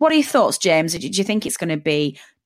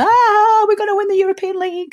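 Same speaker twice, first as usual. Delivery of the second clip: acted, excitable, very high giddy whooping cheer; 14 semitones higher, 5 dB louder than usual. Host contrasting their own role with co-host James: mock-giddy excitement. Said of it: "I'm the emotional, excitable, giddy one that goes".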